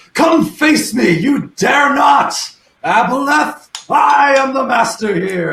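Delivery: shouting. A player's character yells toward the Aboleth to distract him, yelling a challenge. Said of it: "I'm going to yell towards him".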